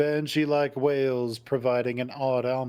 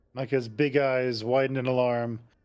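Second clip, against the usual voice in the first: plain reading voice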